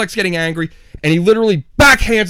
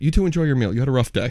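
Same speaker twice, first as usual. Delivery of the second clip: imitated, very calm, even delivery; 6 semitones lower, 6 dB quieter than usual. Retelling what a man told him and his cousin as they got up, retelling a very calm remark. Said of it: "Very calmly goes".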